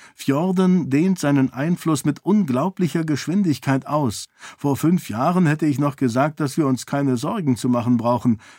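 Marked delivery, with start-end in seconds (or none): none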